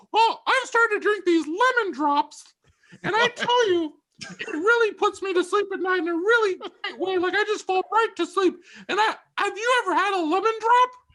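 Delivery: very high-pitched, lifted voice. Retelling a brother's talk about drinks, imitating brother, high-pitched. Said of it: "this is the voice I use, because he gets a little high pitched".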